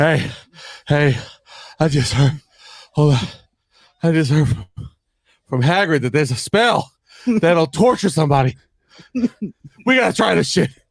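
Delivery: put-on breathless, panting voice. Acting out a friend running into the cafeteria with news: imitating Ryan out of breath. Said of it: "the guy who's out of breath running into".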